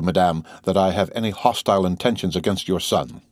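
ordinary talk

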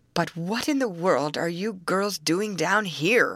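full of wonder, wondering tone. Will, just found again by the girls, asks them wonderingly. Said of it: "Will asked wonderingly".

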